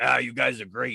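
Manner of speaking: put-on loud dumb-guy voice. Speaker demonstrating a voice they often do: voice like a loud moron. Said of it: "when I do like I'm a loud moron".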